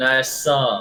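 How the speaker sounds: American Western drawl. Speaking in character in a Wild West game: Western accent. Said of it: "I keep giving myself a Western accent".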